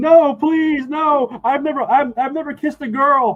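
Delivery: terror-stricken screaming, very high, slow and drawn-out. A young man running away after barely escaping a blow, screaming in terror. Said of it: "keeps running and screaming, screaming".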